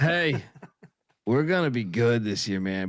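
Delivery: mock slow, laid-back, stoned drawl. Retelling how someone sold the team's prospects: imitating a stoned dude. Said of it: "like a dude that's just smoked a ton of weed".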